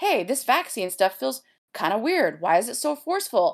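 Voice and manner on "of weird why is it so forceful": ordinary talk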